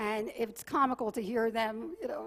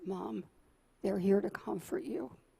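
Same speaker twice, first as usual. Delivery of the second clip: whispered words. A mother retells her son whispering in her ear on the balcony, retelling a whisper. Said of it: "And he whispers in my ear".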